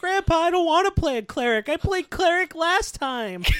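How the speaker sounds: put-on high, loud, piping little-kid voice. Acting out a kid talking to his grandpa about the game: little Timmy voice. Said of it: "little Timmy's like".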